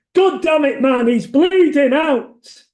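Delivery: put-on Wigan accent. Quoting dialogue from a story set in a hideout after a botched robbery: unsuitable Wigan accent. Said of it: "all said with deeply unsuitable Wigan accents".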